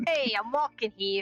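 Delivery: put-on Brooklyn accent. Asked how good their Brooklyn accent is, trying it out: Brooklyn accent. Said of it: "How good is your Brooklyn accent?".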